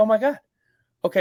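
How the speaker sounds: very high, panicked, freaking-out voice. Speaker retells watching his team's offense return to the field, retelling freaking out. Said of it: "I'm freaking out".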